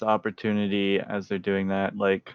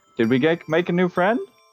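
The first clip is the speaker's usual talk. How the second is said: cheerful, happy, very high-pitched raised voice; 9 semitones higher, 5 dB louder than usual. Voicing a character greeting a newcomer: happy. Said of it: "come up and say happily".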